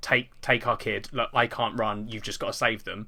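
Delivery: ordinary delivery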